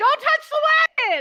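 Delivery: urgent, very loud, high, rapid yell. Warning a guard not to touch a cursed wagon: yelling in character. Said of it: "I yell".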